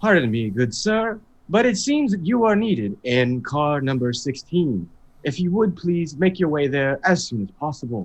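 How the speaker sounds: put-on synthetic hologram announcer voice. A player sends a message to a gentleman by the other door, hologram voice impression. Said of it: "use my best hologram voice impression".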